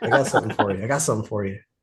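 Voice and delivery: put-on whisper. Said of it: "started whispering".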